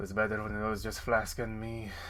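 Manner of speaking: muttering under breath. After writing in her journal, a character speaks to herself, muttering under her breath. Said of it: "You can hear her say under her breath".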